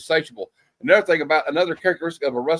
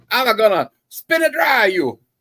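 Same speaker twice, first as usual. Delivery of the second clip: put-on angry old Italian grandma voice, higher; 7 semitones higher, 4 dB louder than usual. Repeating a movie line just heard: imitating an angry old Italian grandma. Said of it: "That sounds like a, an angry old Italian grandma".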